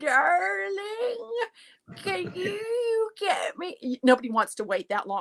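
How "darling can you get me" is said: very high, very slow, drawling grandmother voice. Demonstrating how a grandmother asks for coffee, in a slow grandmother voice. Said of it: "a grandmother to me would probably speak even slower than that".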